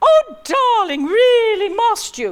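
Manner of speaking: very high, projected, theatrical stage voice. Showing how she speaks on stage to project: higher-pitched stage speaking voice. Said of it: "I will speak much more up here".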